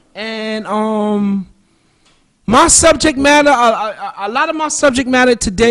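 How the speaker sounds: stuttering, repeating "a", drawn-out "um". Speaker greets listeners and introduces his subject, stuttering. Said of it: "excuse me for stuttering".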